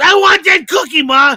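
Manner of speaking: high, loud little-kid voice, wanting it badly. Acting out a kid asking his mom for a cookie: imitating a kid asking.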